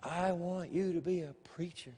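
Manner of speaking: soft, hushed, barely audible half-whisper. Retelling a calling heard during a sermon: retelling a half-whisper. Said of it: "the Lord whispering to me".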